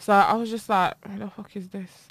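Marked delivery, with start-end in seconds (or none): 1.1-1.9 muttered under breath, much quieter. Retelling reacting in shock to a stranger, muttering it under breath. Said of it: "under my breath".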